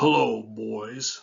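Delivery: put-on deep grown-man voice, "boys" stretched long. Retelling a man stepping out between the boys and the speaker, Roland's deep voice. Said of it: "and in a deep voice said".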